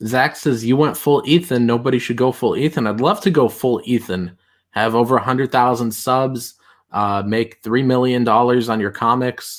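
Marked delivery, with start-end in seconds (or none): none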